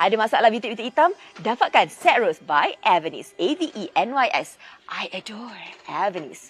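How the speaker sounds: low TV advert announcer voice-over. Speaker promoting a skincare set, commercial announcer voice. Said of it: "Aku dah buat suara iklan pula".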